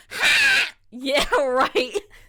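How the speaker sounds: shrill, pterodactyl-like screeching.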